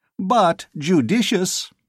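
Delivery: thin, very high squeaky voice. Reading a novel aloud, voicing a bulky character's remark in a high squeak. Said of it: "squeaked in the high, eukonoid voice".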